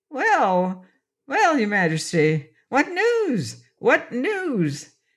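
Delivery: shrill, cracked, slow voice, words stretched. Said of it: "he demanded in a shrill, cracked voice".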